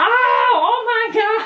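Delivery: panicked, freaked-out tone. Retelling stepping on a pin in the bathroom, acting out past panic. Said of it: "and I'm freaking out".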